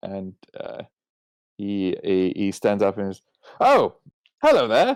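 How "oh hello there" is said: put-on higher, louder, faster young boy's piping voice. As the visitors reach his table, a narrator voices the young lad piping up. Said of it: "the young lad pipes up".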